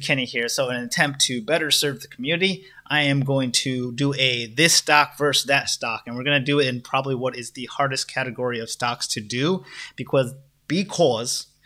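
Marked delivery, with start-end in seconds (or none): 10.0-11.4 put-on slow Boston accent. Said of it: "that was my Boston accent there".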